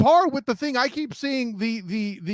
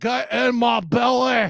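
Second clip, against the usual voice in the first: very slow, dragged-out comic voice, every word stretched. Describing a lineman crushing a quarterback, doing a Fat Bastard impression. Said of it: "does his best fat bastard impression".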